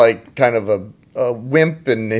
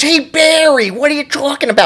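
put-on little kid voice with Chicago accent; 14 semitones higher than usual. Showing others how a TV kid always talks, do an Adam Goldberg voice with Chicago accent. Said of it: "he's always talking like this".

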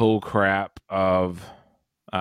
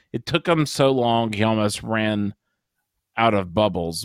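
normal talking voice

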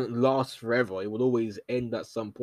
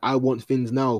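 normal talking voice

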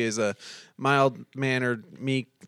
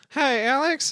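put-on lady voice, pitched way up; 13 semitones higher than usual. On a phone call, greeting the man who picks up in a lady voice. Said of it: "I'll do a lady voice".

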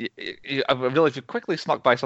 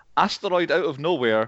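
ordinary delivery

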